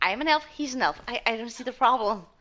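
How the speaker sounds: ordinary delivery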